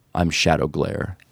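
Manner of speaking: completely earnest, very serious, solemn delivery. Retelling a stranger's reply to an introduction: imitating Shadow Glare, very serious. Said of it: "very seriously is, says".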